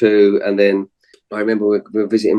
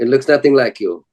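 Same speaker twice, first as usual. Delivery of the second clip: put-on Belgian accent; 3 semitones higher than usual. Quoting people who didn't believe it was him, in a Belgian accent. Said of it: "That's my Belgian accent".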